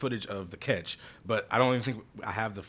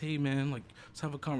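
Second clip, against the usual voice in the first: gentle, calm, meek, mild voice, pitched up; 5 semitones higher, 3 dB quieter than usual. Showing how he talks to them now: imitating his own meek talk. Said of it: "I'm all meek".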